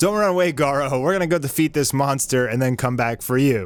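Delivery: ordinary talk, nothing marked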